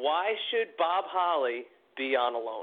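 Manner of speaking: put-on flat delivery. Bob Holly picturing himself as the loan executive facing the listener, mock deadpan delivery.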